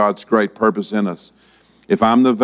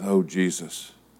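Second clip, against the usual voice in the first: whispered under breath, much quieter; 3 semitones lower, 9 dB quieter than usual. Speaker retells a woman at a convenience store counter: whispering under her breath. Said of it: "this woman whispers just under her breath".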